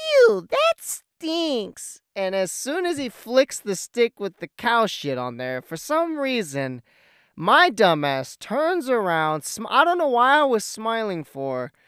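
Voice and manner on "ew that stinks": put-on very high, squeaky, swooping small-child voice. Retelling a story about a kid, speaker does a young little kid's voice. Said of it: "like a a young a young little kid".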